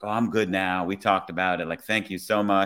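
ordinary delivery

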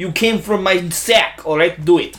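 bad, fake put-on Russian accent. Imitating a dad urging his son, in a bad Russian accent. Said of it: "our shitty fucking Russian accents".

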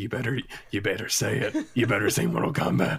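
hushed stage whisper under the breath. Pretending a game character staring from the screen speaks: whispering as Scorpion.

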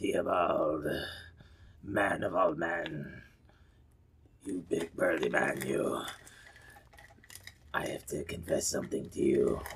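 very quiet, eerie, creepy half-whisper. A character leans to another character's shoulder to confess something: creepy half-whisper. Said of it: "start whispering creepily like I do in his ear".

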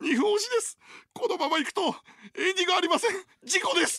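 mock very high, weepy, tearful crying voice. Retelling a broadcast running two minutes over, the speaker imitates TK's crying voice. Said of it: "泣き声で".

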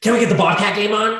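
loud, rude, ignorant-sounding voice. Retelling a snowmobiler in a bar demanding the game from a girl, retelling a loud, rude demand. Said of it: "Real fucking loud to this girl".

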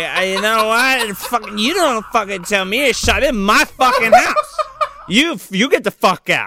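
boozy, ranting New Jersey housewife voice. Acting out a movie queen in a scene recap: drunk jersey housewife voice. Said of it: "the fucking drunk Jersey House wife".

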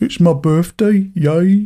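bad, glum, drawn-out, depressed-sounding Birmingham accent. Describing an accent where you sound depressed: bad depressed-sounding Birmingham accent. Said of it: "that sort of Bromita accent where you sound depressed all the time".

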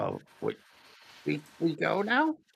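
broken, guttural, growled speech with swooping pitch. Narrator voicing Maiko, who speaks broken Common, in broken guttural speech. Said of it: "broken, kind of hard to understand, a little guttural".

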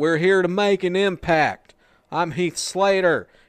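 weird, very loud, high southern drawl. Describing him trying to cut a serious promo, Heath Slater's weird southern drawl. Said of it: "with his weird southern drawl".

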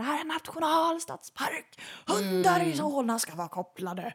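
mock shouting, high-pitched yell. Recounting how a man out there started shouting, retelling a man's shout. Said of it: "började han i alla fall skrika".

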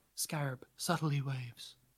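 low, hushed whisper close to the mic. Whispering into the podcast microphone. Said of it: "I'll have to whisper into the microphone".

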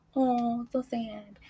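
high little babyish put-on voice. Retelling not wanting someone to leave, in a little baby voice. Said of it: "hit the little baby voice".

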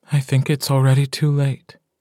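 hushed whisper. A narrator reads a woman answering a man in a shop, whispered. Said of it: "she whispers".

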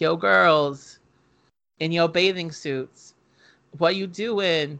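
ordinary delivery

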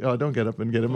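ordinary talk

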